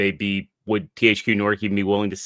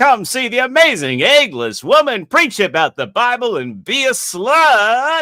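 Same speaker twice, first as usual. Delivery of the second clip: high, swooping carnival barker call; 8 dB louder than usual. Recapping a story, voicing Maz as a sideshow attraction announcer. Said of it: "like a sideshow attraction announcer".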